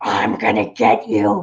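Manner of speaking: slow, rough, creaky, gravel-throated voice. Retelling how she would start these incidents: imitating a gravelly voice. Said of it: "she would get this, like, gravelly voice".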